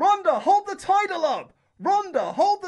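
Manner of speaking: very loud, high, shrill, booming yell. Retelling how a guy off camera kept shouting instructions, imitating someone shouting loudly. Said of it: "loudly as you possibly can".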